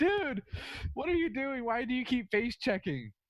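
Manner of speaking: exasperated yelling. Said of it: "We're kinda yelling at each other".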